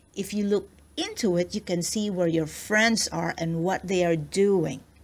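ordinary delivery

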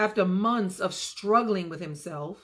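ordinary delivery

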